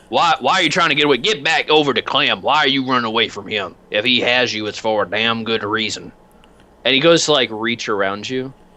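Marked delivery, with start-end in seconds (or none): 0.1-6.1 voice of a big heavy man. Voicing a big hefty man who finds an intruder in his doorway: voicing a big hefty man. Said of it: "And he's just like".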